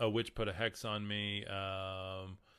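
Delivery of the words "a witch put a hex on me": usual speaking voice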